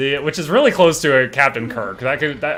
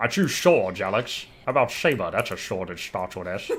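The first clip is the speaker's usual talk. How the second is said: put-on Scottish voice, lower and quieter; 5 semitones lower, 6 dB quieter than usual. Showing the voices he can do: Sean Connery voice. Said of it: "We've got the Sean Connery".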